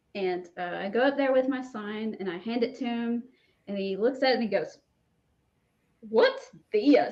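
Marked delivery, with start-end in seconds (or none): 6.1-7.1 put-on Georgia accent, very loud. Retelling a man's reaction to being handed a sign, imitating a Gainesville, Georgia accent. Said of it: "And his very Gainesville, Georgia accent".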